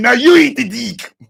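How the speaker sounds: gloating tone in a put-on German accent. Retelling a show scene where the lawyer comes back, imitating a German accent. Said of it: "came back with his German accent and said".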